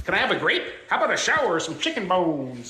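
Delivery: put-on voice of a talking gray parrot. Retelling what a friend's gray parrot says: imitating a gray parrot talking. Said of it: "he says it just like that".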